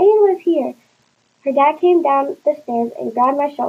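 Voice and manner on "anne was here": high-pitched, loud yell. Narrator reads Sydney calling to her dad as Anne arrives: yelled. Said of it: "she yelled".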